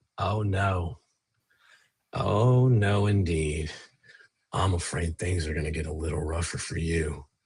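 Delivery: slightly unhinged put-on character voice. A game master, as Erudai, looks at the player and speaks in a slightly maniacal voice. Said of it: "slightly maniacal voice".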